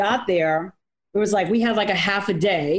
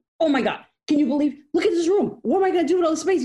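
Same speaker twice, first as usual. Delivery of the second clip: put-on full-on freak-out, high and excited; 8 semitones higher than usual. Retelling how he reacted to being given the whole top floor, imitating someone freaking out. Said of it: "he was freaking out".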